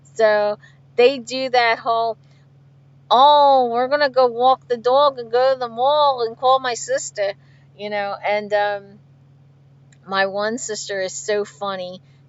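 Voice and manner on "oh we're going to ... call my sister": loud, put-on Philadelphia accent. Describing sisters born and raised in Philly, imitating how they talk, with a Philly accent. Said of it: "they were born in Philly and they were raised in Philly".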